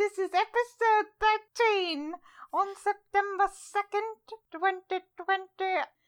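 weird, put-on semi-old man German-ish accent. Opening the episode in a weird semi-old man Germanish accent. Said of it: "my weird semi-old man Germanish".

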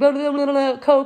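put-on gibberish mumble. Retelling how someone tried ordering a Coke in fake Spanish: imitating fast mumbling. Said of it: "like mumbling, like, super fast".

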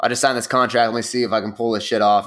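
ordinary talk

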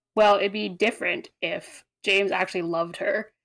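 ordinary delivery

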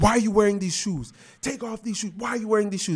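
very high, scolding, nagging yell. Retelling how his mom yelled at his dad about his shoes: imitating mom yelling. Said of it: "She was just yelling at him".

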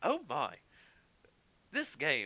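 high, swooping, prim, overly courteous robot voice. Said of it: "C three P O ... 'Cause he's gonna be so polite".

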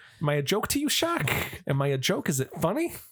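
high, swooping, confrontational wiseguy gangster-style voice. Acting out a movie character confronting the shark: Joe Pesci impression. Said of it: "I'm doing Joe Pesci".

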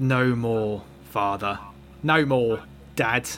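slow, put-on London Cockney accent. Narrating a game, the adult stands up to the father; Cockney accent. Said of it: "in your Cockney accent".

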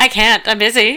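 sarcastic fake cheer. Retelling how a guy turned down helping with ornaments, mock sarcastically happy. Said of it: "sarcastically happy about it".

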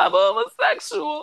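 dazed, stunned, very high-pitched delivery. Retelling a film scene where a character is outed: imitating someone stunned. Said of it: "she's just gonna sit there stunned".

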